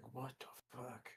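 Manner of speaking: barely audible, very quiet under-the-breath mutter. Voicing a character who reacts to a vote: muttering under his breath. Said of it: "under his breath going".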